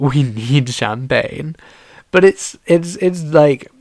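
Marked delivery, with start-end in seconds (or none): none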